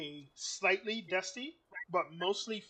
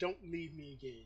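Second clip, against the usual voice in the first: severe, stern woman's voice; 2 semitones lower, 6 dB quieter than usual. Voicing an unseen woman heard from below: stern female voice. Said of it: "stern female voice".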